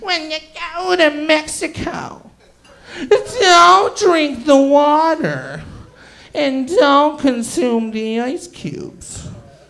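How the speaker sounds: slow, ominous, foreboding witch voice. Speaker retells family members warning them, witch-like warning. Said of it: "like a witch warning me not to go to the mountain".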